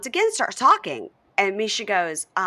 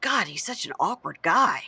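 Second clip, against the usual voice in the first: mock muttering under one's breath. Retelling a scene, a remark said under the breath: imitating a mutter under breath. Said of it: "under his breath".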